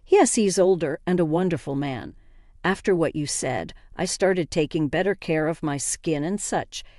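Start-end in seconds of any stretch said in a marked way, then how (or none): none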